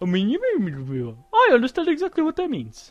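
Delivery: horrible fake Ethiopian accent, high and loud.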